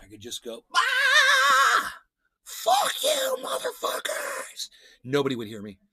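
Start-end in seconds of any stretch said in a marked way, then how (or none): 0.7-4.7 very high, drawn-out, top-of-the-lungs acted scream. Retelling screaming out a window: retelling a scream. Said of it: "scream at the top of my lungs".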